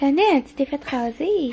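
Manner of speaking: soft cooing.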